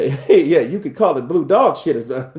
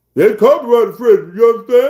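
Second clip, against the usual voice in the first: put-on loud, high country-boy Southern drawl; 7 semitones higher, 6 dB louder than usual. Retelling how Frank Lucas really sounded: imitating a country boy accent. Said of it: "He talked like a country boy".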